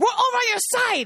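put-on, very high, overly loud nurse voice. Retelling what a lady with a strong accent said, imitating her loud talk. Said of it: "she talked really loud".

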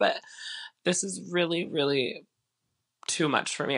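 fake crying, halting, breaking mid-phrase. Joking about a sad mansion sale: mock tearful. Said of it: "I said I wasn't gonna cry tonight".

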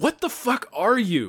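high, slow, baffled disbelief.

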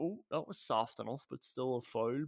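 plain

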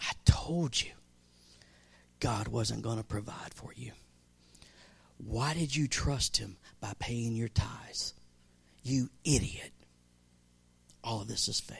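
jeering, taunting whisper. Voicing the enemy taunting someone who lost a job: imitating a taunting whisper. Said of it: "he comes in and he whispers and he says".

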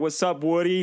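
put-on Boston guy voice. Joking about the toy horse talking like some guy from boston: put-on boston guy voice. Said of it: "some guy from Boston".

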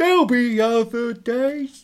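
very slow, very high, half-hearted, without conviction. Rereading a character's line from a story, in a half-hearted Gav voice. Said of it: "should I try and do that again in a Gav half-hearted voice?".

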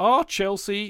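odd break, voice cracking and going high. Asking a co-host whether Chelsea are fading: voice going weird. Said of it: "that went a bit hu-, weird".

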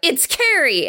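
high-pitched, yelled-out correction of the name. Retelling a film scene where a character finally shouts: imitating a shout. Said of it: "she shouts out".

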